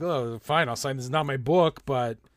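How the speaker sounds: imitated Quebec accent. Retelling what a chef seemed to think of him: Quebec accent. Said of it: "that's a Quebec accent".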